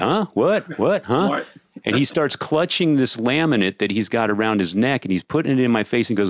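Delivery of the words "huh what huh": mock confused, pitched-up, playing-dumb tone. Retelling how a man yelled over blaring music, and they answered playing dumb. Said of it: "I play dumb, like I can't hear him".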